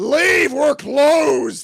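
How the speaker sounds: very loud, shrill, angry scream. Retelling the main lady screaming at them through the door: imitating a scream. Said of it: "the main lady screams at us".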